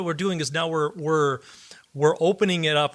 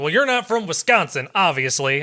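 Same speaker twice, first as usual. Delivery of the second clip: put-on American Southern accent; 3 dB louder than usual. Retelling own earlier remark about where someone is from: put-on Southern accent. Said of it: "a Southern accent when I do that".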